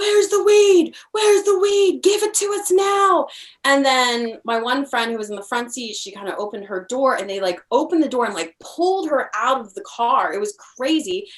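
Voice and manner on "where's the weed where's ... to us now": put-on, very high, screaming delivery. Retelling a traffic stop where a cop screamed at them: imitating a cop screaming. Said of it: "They're screaming at us".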